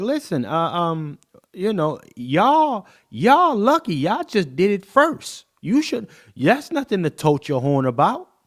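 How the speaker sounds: loud, high, angry, angsty, entitled tone. Imitating a woman speaking to a man: imitating a woman's angst. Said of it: "the angst in her voice".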